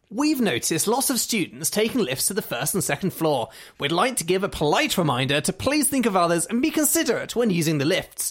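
snooty. Reading out a passive aggressive notice about lifts, in a really snooty voice. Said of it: "Shall I read it out in a really snooty voice?".

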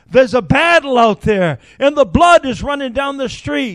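put-on high, screamed outburst. Retelling what a disheveled man screamed out at lunch: imitating a man screaming. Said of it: "he screamed out and he says".

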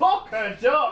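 silly, stupid put-on northern English accent. Recalling watching an episode earlier, the speaker repeats a stupid voice done for a character. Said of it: "doing a stupid voice for this character".

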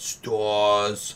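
put-on "stars" drawn out in a near New York accent. Describing a game villain's line, Nemesis, near New York accent. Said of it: "with a almost New York accent".

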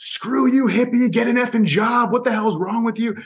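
high, shrill, jeering, angry yell. Retelling how circus visitors yelled at a protester: imitating people yelling. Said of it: "they're yelling at her, like".

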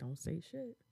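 hushed, very quiet whisper under the breath. Retelling what a sister said while others asked questions: imitating a whisper. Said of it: "and she's whispering".

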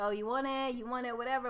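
normal talking voice

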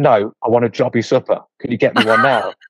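cross, angry, insistent tone. Retelling an order at a chip shop counter: imitating someone angrily demanding. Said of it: "getting angry at him for not having one".

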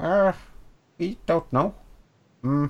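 high, soft, squeaky small creature voice. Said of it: "I'm trying to do a small creature accent".

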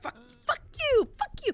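put-on small child screaming, very high, swooping. Retelling a five-year-old yelling at two other kids, imitating a five-year-old screaming. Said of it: "And so it's like screaming".

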